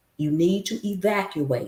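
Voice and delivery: ordinary talk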